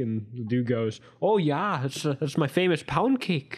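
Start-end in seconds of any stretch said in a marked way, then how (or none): 1.2-3.6 put-on speaking with Canadian accent. Retelling what a dude said, Canadian accent. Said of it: "he actually does sound kind of Canadian".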